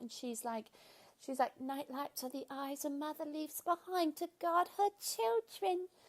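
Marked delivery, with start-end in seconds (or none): 1.6-5.9 magical, sweet, high motherly voice. Retelling a film scene where the mother speaks to her children: imitating a magical, sweet mother. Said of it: "so magical and sweet".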